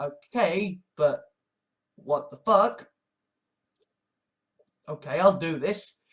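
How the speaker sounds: normal talking voice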